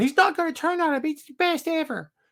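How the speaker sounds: put-on very high, terrible cartoon-kid voice. Acting out what the speaker said as a kid, in a terrible South Park voice. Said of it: "It's a terrible South Park voice".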